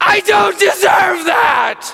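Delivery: very high, very loud, agonised, anguished bellow. Recounting what a man cried out after being hugged, retelling a bellow. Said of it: "He just bellowed".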